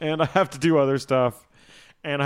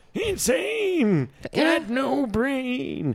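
very high, very slow, swooping, unhinged-sounding voice; 11 semitones higher than usual. Making a joke mid-conversation, Abraham Lincoln impression. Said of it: "this Abraham Lincoln impression".

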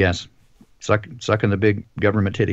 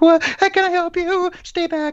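very high, startled voice jumping up an octave. Retelling how a masked man answered when approached too closely, voice jumping up an octave. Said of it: "his voice goes up an octave".

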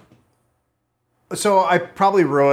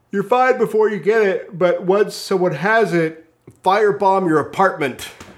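high, mock panicked put-on voice. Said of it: "it was like".

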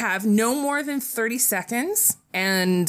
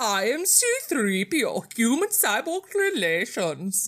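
put-on Austrian accent. Taking a turn at an accent drawn from a bowl, C-3PO line in Austrian accent.

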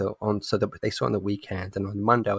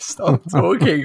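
stunned, slow and high pitched. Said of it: "I just started shouting".

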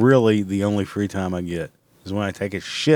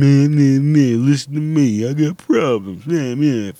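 put-on high, drawn-out whine; 5 semitones higher, 5 dB louder than usual. Mocking own complaining about recording time: mock whining. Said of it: "I'm whining like a bitch".

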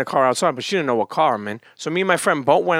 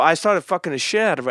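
ordinary talk, nothing marked

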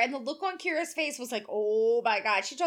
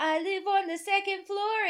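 put-on cute little German accent, pitched up; 6 semitones higher than usual. Retelling meeting a German kid, the speaker quotes his reply in Luca's cute German accent. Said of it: "in his cute German accent".

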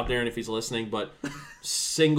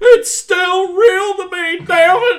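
very high-pitched, very loud, indignant, upset outburst; 12 dB louder than usual. Retelling a man upset that wrestling was called fake: mock-upset wrestling fan. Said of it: "a great impression".

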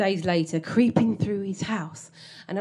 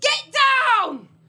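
shrill, sudden, high, loud shout; 5 dB louder than usual. Retelling how an old man suddenly shouted during a hallucination: imitating an old man shouting. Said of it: "suddenly he shouts".

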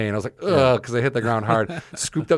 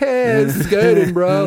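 high, very slow, dragged-out stoned drawl; 9 semitones higher, 6 dB louder than usual. Retelling longboarding around a parking lot while baked: imitating being stoned. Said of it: "I'd just be all baked".

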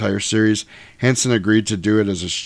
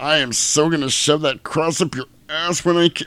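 annoyed, with pitch raised; 6 semitones higher than usual. Imitating an actor's Dracula facing a cross: imitating Jack Palance's annoyed Dracula. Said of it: "it just comes across as".

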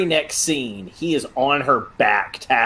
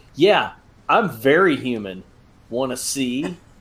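normal talking voice

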